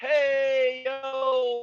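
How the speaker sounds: high holler, yo stretched long. Hollering out to the people below in character: in-character holler. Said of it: "just holler, holler out, like".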